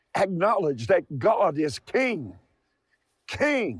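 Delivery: impassioned, passionate preaching voice. Calling on listeners to crown the king: passionate. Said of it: "hear the passion in my voice today".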